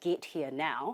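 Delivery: ordinary talk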